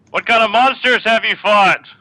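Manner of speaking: very high-pitched, loud shouted yell. In a tabletop game, one character questions another: yelling. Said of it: "You don't need to yell".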